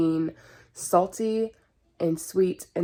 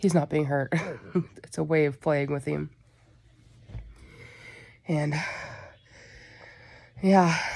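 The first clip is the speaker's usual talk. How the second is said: winded, slower; 3 semitones lower than usual. Talking to camera after playing with a pet, out of breath. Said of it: "now I gotta catch my breath".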